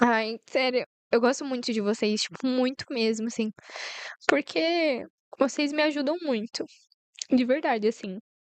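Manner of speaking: weeping through the words, tearful. Thanking the listeners for helping her grow, crying while talking. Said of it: "Disse ela já chorando".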